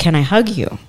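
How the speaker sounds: usual speaking voice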